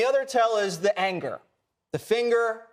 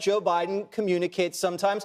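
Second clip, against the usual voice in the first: plain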